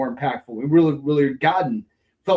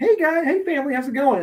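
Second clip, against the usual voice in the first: bright, cheery voice pitched very high; 13 semitones higher than usual. Acting out a character greeting the kids: smiling Superboy Prime greeting. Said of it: "shows up to the kids with a smile on his face".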